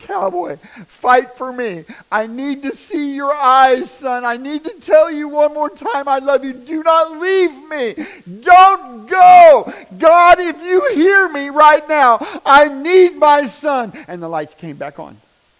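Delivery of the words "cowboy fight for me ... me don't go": full-lung anguished, desperate screaming, very high and loud. Retelling driving while on the phone with their dad: re-enacting screaming at top of lungs. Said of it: "I'm screaming at the top of my lungs".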